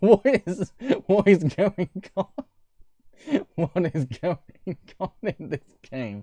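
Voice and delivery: talking through laughter. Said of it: "My cheeks are hurting from laughing".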